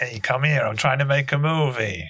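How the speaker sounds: put-on New Jersey accent throughout. Joking that Nollywood is New Jersey: New Jersey accent. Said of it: "like, "New Jersey, yeah."".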